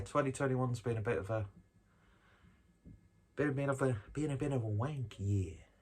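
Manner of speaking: odd put-on American accent. Speaker in a video reflecting on the past year, in a weird American voice. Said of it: "Don't know why I did that in a weird American voice".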